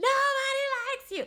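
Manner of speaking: put-on high-pitched, drunken yelling. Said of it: "she starts yelling at Carl".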